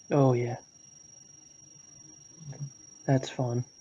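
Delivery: casual, offhand, nonchalant, unbothered tone. Reacting to the point that people still torture, nonchalant. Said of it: "You said that so nonchalantly".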